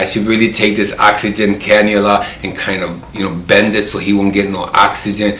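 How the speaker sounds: usual speaking voice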